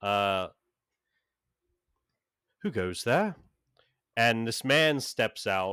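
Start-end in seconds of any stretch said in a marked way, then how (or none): 0.0-3.3 put-on older-sounding British voice with British accent. Voicing an unseen figure in a library-like building: older british accent. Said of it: "Like this kind of older British accent".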